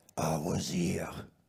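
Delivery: odd put-on French accent, low and loud. Retelling a dying man's words to the audience, in [name]'s weird French accent. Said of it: "I said it in a weird French accent".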